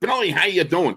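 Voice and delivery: squeaky, very high-pitched broadcaster voice. Retelling a broadcaster's phone greeting: Myron Cope squeaky high voice. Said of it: "he had that squeaky high voice".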